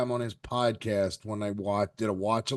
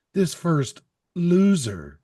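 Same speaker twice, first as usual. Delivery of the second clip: slow, loud ring announcer voice. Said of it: "They use a recorded voice".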